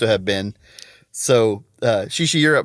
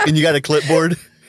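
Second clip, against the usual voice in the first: ordinary talk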